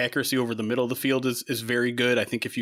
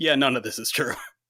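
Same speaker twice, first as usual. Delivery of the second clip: snide, scornful, mocking, sarcastic tone. Retelling how a player's agent replied to a reporter's tweet, in a put-on mocking tone. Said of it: "in the most mockingly tone possible".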